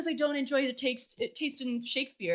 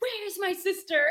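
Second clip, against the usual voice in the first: put-on angry voice, higher; 5 semitones higher than usual. Retelling a character grabbing a gun and asking about his sister: imitating an angry demand.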